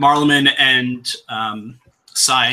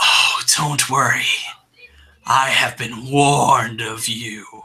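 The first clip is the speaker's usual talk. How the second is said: raspy theatrical whisper. A figure speaks to the group as the Lady of Bones once did, husky loud whisper. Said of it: "whisper, but with the same sort of like husky, loud whisper".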